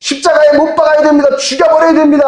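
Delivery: very high, loud, angry crowd shouting.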